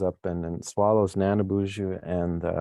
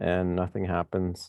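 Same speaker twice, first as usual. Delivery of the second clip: ordinary talk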